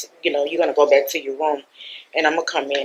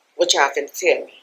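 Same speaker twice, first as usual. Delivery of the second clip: usual speaking voice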